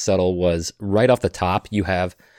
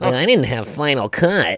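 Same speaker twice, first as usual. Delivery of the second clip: nerdy voice, pitched up and drawn out slowly; 5 semitones higher than usual. Speaker recalls how David Lynch sounded, nerdy David Lynch impression. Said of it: "he sounded like a nerd".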